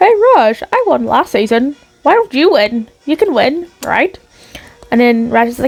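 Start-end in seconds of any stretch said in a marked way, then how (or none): 0.0-4.2 put-on self-assured, confident winner voice. Recapping a challenge, speaker voices a hockey pro talking to his tied rival, [name]'s put-on win voice. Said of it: "I'll put on my win voice".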